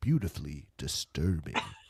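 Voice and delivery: very low, slinky, sultry delivery. Summing up a movie in two words: imitating a sultry tone. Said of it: "in that sultry tone".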